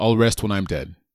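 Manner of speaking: ordinary talk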